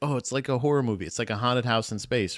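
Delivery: ordinary talk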